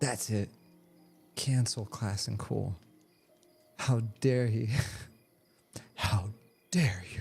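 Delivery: put-on outraged girl voice. Imitating an angry member of the boxing community: imitating an outraged girl. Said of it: "that was my imitation of that girl".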